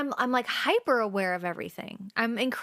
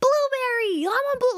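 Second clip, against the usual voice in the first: put-on shrill, very high, childish, eager excited voice; 14 semitones higher, 6 dB louder than usual. Retelling ordering at a donut shop, imitating own excited, childish, high-pitched voice. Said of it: "My voice gets really childish and high pitched when I'm like excited".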